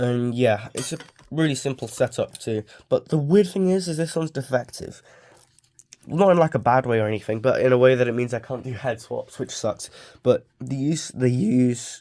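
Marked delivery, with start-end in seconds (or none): 10.2-12.0 slow, goofy voice crack mid-phrase. A speaker explaining a simple setup to viewers, voice cracking mid-sentence. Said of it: "that voice crack was so goofy".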